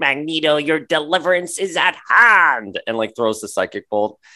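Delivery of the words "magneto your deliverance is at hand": put-on high old-lady granny voice. Recalling a character's line from Pride of the X-Men, the speaker does a granny voice. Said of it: "she had that like granny voice".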